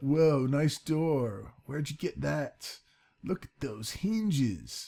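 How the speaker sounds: put-on generic surfer dude voice. Showing his door, voicing someone admiring it; generic surfer dude voice. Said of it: "that's just my generic surfer dude thing".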